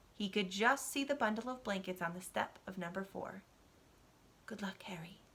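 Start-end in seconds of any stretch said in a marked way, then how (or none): 4.5-5.2 barely audible, very quiet murmur. Reading a quiet goodbye to a baby left on a doorstep: murmuring. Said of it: "he murmured".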